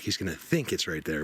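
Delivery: ordinary talk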